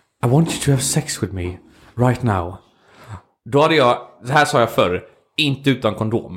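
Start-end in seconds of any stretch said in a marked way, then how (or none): 0.3-2.6 put-on very posh, laid-on upper-class English accent. Imagining an admired woman arriving at the speaker's flat, quoting her in a very posh British accent. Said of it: "med sin väldigt högbrittiska röst".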